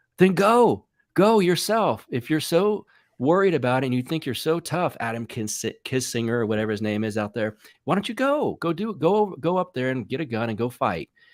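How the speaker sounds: heated cursing tirade. Retelling what he yelled at a man he names, retelling his own yelling and cursing. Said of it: "Then I'm like yelling".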